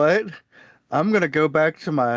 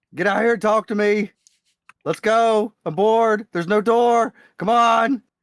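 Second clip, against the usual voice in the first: high-pitched screaming call; 6 semitones higher than usual. A character calls for people to come out and talk, screaming. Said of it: "I'm screaming".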